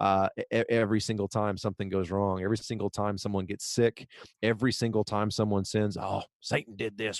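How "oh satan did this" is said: put-on Southern church voice, quieter. Imitating Southern churchgoers blaming Satan: imitating a Southern church accent. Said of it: "you're welcome for that accent".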